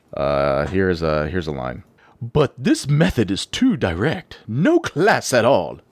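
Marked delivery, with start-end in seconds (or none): 2.2-5.6 posh Queen's English, laid on thick, swooping. Showing a Papyrus line from the bridge trap scene: over-the-top Queen's English. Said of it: "the over the top, like, Queen's English sounding".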